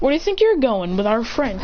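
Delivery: ordinary talk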